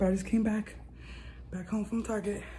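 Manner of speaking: out of breath. Just back home from target, talking to viewers, out of breath. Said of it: "I'm out of breath".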